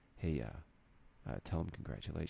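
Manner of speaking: very quiet close whisper. Retelling a wrestling segment, imitating a whisper into someone's ear. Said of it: "whispers it in his ear".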